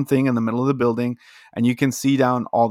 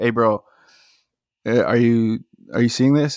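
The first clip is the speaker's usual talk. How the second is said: playful, jokey delivery. Retelling what he jokingly said to his coworker in the hall, retelling a joking remark. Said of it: "I jokingly said to my coworker".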